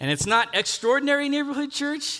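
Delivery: extraordinary said high and loud, church unstressed.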